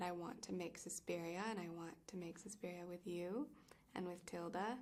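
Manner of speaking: soft, hushed whisper. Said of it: "standing there whispering about something".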